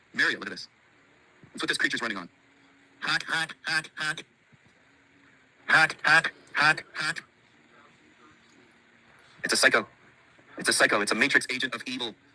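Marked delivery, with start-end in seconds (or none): 3.0-7.2 nose-pinched nasal voice, very slow. Showing Mario a creature, voice it with a pinched-nose nasal voice. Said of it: "I had to pinch my nose to do the".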